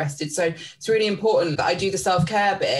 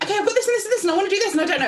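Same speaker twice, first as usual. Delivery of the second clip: very high-register chatter, all up top; 14 semitones higher than usual. Retelling how they arrive at coaching sessions, imitating own high-register voice. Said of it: "all very, like, high register".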